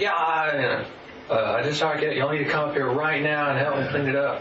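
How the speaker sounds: frantic, agitated, half-shouted mild yell. Retelling a phone call asking parents to come help: imitating own past yelling. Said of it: "basically yelling at the top of my lungs".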